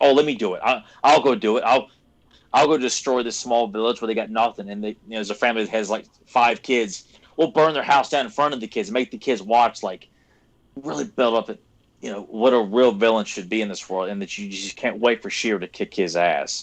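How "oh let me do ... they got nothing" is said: ordinary delivery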